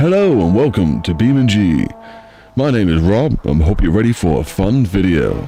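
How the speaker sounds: put-on on-air radio presenter voice. Showing his recording voice for a video intro: radio presenter voice. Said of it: "I put my, my radio voice on. Like".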